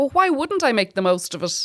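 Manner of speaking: ordinary talk, nothing marked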